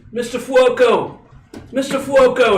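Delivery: very high, carrying, drawn-out shout. In a blizzard scene, the game master voices the player's character yelling a name. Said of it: "You're yelling out currently".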